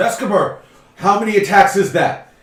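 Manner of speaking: very loud, high-pitched yell. Voicing an old gentleman sitting down, yelling up to a dwarf: yelling up. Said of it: "who's sitting down yells up".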